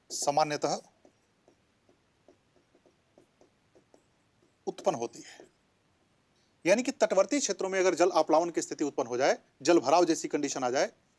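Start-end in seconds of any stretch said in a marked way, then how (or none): 0.1-5.4 slow, measured, deliberate pace. A speaker dictates a definition for listeners to write down; speaking slowly. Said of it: "मैं इसलिए धीरे धीरे बोल रहा हूं".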